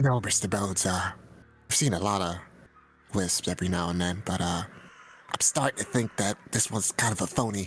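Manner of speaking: hushed whisper. Player in character answering mr. bones out of earshot, whispering. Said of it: "What are you whispering about?".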